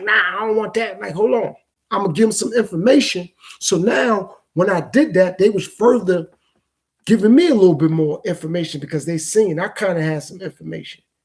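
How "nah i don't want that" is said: put-on rebellious, defiant tone. Describing a reply he chose not to give a man, mock-rebellious tone. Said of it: "sounding rebellious".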